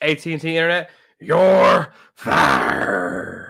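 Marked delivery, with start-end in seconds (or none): 1.2-3.5 very slow, drawn-out delivery with swooping pitch. On a sports talk show, [name] does a quick bit: Vince McMahon voice. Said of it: "in the Vince McMahon voice".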